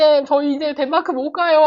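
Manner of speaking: tearful, weepy, crying voice. Retelling students who came to the teacher crying: imitating crying students. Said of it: "막 울면서 왔더라고요".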